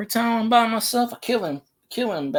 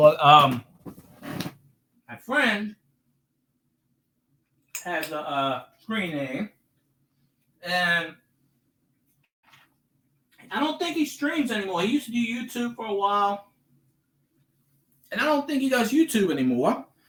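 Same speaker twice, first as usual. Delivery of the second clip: speaking through a mouthful while chewing; 4 dB quieter than usual. Telling about a friend's screen name, talking while chewing. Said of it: "I'm chewing this damn acid".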